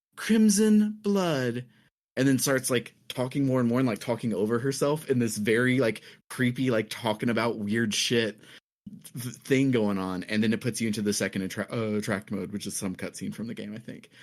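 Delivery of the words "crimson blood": put-on orgasmic voice. Retelling what a game character says on the title screen: imitating an orgasmic voice. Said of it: "in a very orgasmic voice".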